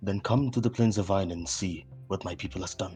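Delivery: speaking in a whisper. In a role-play scene, a character answers while being held in place, whispering. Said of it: "and he whispers back".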